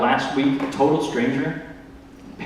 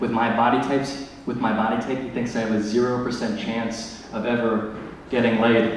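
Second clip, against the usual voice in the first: normal talking voice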